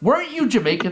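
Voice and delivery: high, mocking, jeering wrestler voice. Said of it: "the best still to this day was Triple H".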